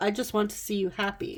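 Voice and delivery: ordinary talk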